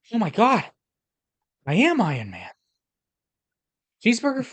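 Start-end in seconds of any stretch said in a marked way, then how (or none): 1.6-4.4 put-on Boston tough-guy voice, higher and louder. Answering a request to do Iron Man as Mark Wahlberg: Mark Wahlberg voice. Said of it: "do Iron Man, Mark Wahlberg, please".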